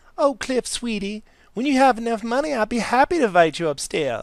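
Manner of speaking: very high, very loud woman's voice. Recording the female character's reply to cliff: voicing her character. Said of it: "I'm gonna do hers too".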